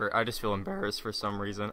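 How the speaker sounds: voice cracking, breaking on a word mid-sentence. Telling friends he feels embarrassed by his own laugh, voice cracking. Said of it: "voice crack".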